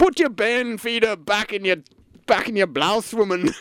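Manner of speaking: put-on Yorkshire accent. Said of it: "in a Yorkshire voice".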